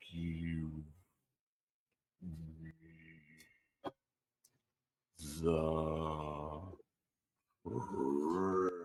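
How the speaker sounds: dragged-out, slowed-down, very quiet, low, hushed, menacing voice. Game master voicing a voice the players hear: slowed-down voice. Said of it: "you hear this slowed down voice say".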